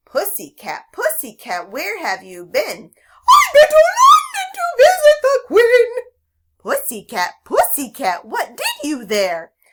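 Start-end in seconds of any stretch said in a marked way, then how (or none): 3.3-5.8 shrill, loud, high silly cat voice, squealed. Demonstrating a nursery rhyme as a dialogue, answering as the cat in a silly Pussycat voice. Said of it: "Pussycat will have a silly voice".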